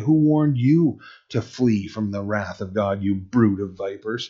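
ordinary talk

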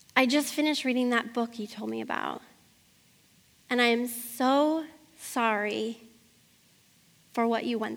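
put-on crying voice. Retelling what a friend said on the phone: imitating someone in tears. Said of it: "she says to me in tears on the phone".

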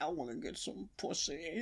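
super deep, very quiet, barely audible voice. Recalling a favourite line from the Culottes episode, imitating Barry's super deep voice. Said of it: "his voice just gets, like, super deep".

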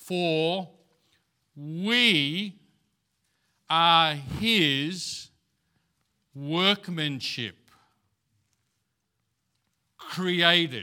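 very slow, deliberate reading with drawn-out we. Reading a Bible verse aloud to listeners, slow and deliberate. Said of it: "I'm going to read it slow, deliberately".

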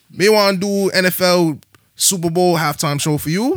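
high, loud, put-on Bajan-style West Indian accent. Retelling how she turned down the NFL halftime show: West Indian accent. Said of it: "I'm gonna say how the Bajans say it".

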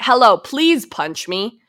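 mock shameless, brazen, unhinged, upfront tone. Retelling how someone asked to be punched: imitating someone saying it loudly. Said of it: "he's saying it, like, loud enough".

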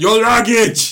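mock movie-line delivery, high, slow, loud shout.

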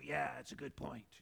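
put-on demon voice, hoarse and raspy. Speaker acting out how a demon would reply at a bible study, in a demon voice. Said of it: "That's my demon voice".

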